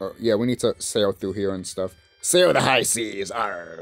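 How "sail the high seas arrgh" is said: put-on pirate voice, slower. Speaker asking viewers how they like his pirate impression. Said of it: "my pirate impression".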